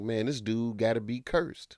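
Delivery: normal talking voice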